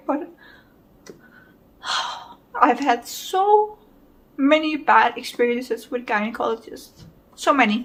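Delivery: talking while fighting off tears. Recounting bad experiences with gynecologists, holding back tears. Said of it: "I'm really trying not to cry".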